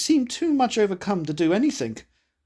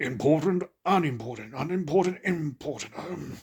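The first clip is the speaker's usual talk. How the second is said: quiet, muttered undertone; 3 semitones lower, 5 dB quieter than usual. A man going over a list to himself, muttering in an undertone. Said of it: "went to himself in an undertone".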